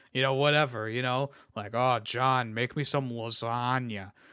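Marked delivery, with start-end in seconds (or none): 1.7-4.0 deep, slow cartoon cat voice, every word dragged out. Describing how Garfield's voice should sound, in a deeper, slower Garfield voice. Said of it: "a deeper, slower tone".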